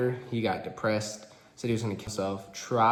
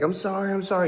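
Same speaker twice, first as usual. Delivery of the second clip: mock, high, tearful sobbing voice; 9 semitones higher than usual. Retelling how she apologized during the attack: imitating her sobbing. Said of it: "she's, like, sobbing".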